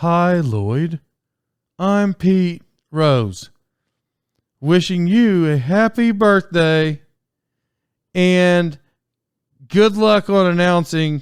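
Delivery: put-on, word-for-word script reading delivery. Retelling a birthday message read out word for word: Pete Rose reading word for word. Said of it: "it sounded like this".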